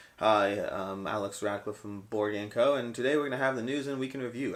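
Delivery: flat, level, uninflected monotone. Imitating how he used to introduce his older on-camera videos, monotone. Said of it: "I was much more monotone".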